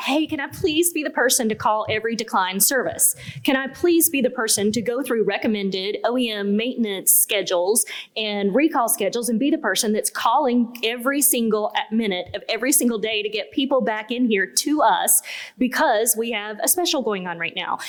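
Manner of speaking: ordinary talk, nothing marked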